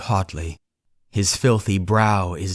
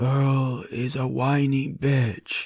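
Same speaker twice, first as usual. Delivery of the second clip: empty, hollow-sounding voice, slow pace; 5 semitones higher, 3 dB quieter than usual. Reading a story aloud, voicing a chained man: hollow voice. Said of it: "he says in a hollow voice".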